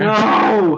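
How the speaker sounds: loud, high-pitched, alarmed shout.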